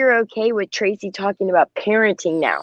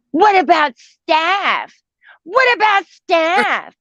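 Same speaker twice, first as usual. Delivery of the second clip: mock high screaming, the word staff drawn out; 8 semitones higher than usual. Retelling how Mo33 took a link and reacted, imitating Mo33 screaming. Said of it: "she starts screaming".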